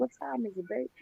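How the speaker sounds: put-on very quiet, drowsy, sleepy old woman's voice. Imitating another speaker who just woke up: imitating a grandma just woken up. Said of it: "like somebody grandma that just got woke up out of sleep".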